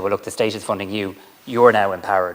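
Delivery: plain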